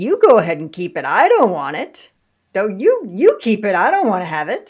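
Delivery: lighthearted. Leading an exercise, saying a line playfully to the listener; playful. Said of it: "I'm going to playfully say to you".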